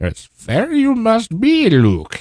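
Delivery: bad, very high, slow swooping sing-song voice. Answering a fellow podcaster about being fair, do the world's worst Yoda impersonation. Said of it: "that's the world's worst Yoda impersonation".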